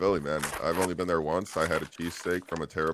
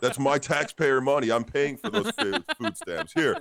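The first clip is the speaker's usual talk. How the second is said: very high-pitched put-on Philadelphia accent; 9 semitones higher, 4 dB louder than usual. Retelling a hilarious scripted skit, act out the man who walks out of his car, imitating a philly accent. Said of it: "making skits with his like Philly accent".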